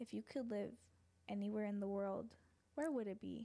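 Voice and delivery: soothing put-on narrator voice. Reading a question aloud to the other speaker: Morgan Freeman soothing voice. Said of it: "do it in my Morgan Freeman, like, soothing voice".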